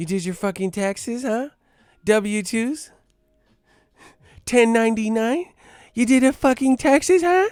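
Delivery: very high, sultry, seductive teasing put-on voice. Acting out a woman in the bedroom: imitating a woman's sexy voice. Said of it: "If she has that sexy ass voice".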